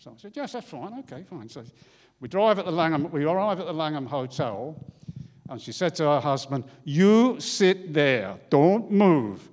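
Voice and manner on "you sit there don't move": put-on Swedish accent, louder, slower. Driver retelling a swedish passenger speaking to her husband, in an attempted swedish accent. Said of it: "I'm going to try and do a Swedish accent".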